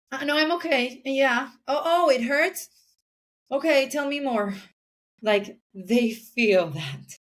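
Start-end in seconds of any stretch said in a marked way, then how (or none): 0.1-4.5 pitched-up, thinly veiled passive-aggressive tone. Parent showing how they talk to their kids when hurt, passive-aggressive tone. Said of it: "than being passive aggressive".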